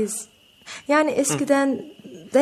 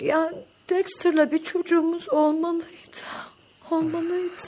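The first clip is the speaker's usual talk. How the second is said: weeping through the words, tearful, pitched-up; 6 semitones higher, 3 dB quieter than usual. Tracy, who has been drinking, talks to someone telling her to calm down, crying. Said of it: "Bırak ağlamayı".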